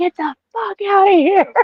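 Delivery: frantic, panicked, very high-pitched urgent voice.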